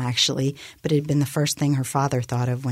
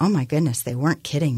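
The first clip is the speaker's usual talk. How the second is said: ordinary delivery, nothing marked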